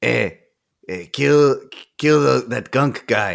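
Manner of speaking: surly, grumpy, mean put-on monster voice. Voicing the mean skull guy as he gives an order: grumpy skull-guy voice. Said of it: "He'll say to him".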